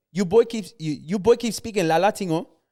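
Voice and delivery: put-on Ghanaian accent. Retelling how a friend's raging mom told the boys off, Ghanaian accent. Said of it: "that's my best accent right now".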